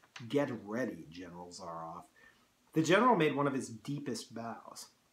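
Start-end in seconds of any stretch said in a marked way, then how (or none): 0.2-2.0 hoarse, very low, hushed voice. A man speaks to the general who has won the game, in a low, hoarse voice. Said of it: "he said in a low, hoarse voice".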